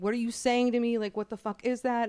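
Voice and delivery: ordinary talk, nothing marked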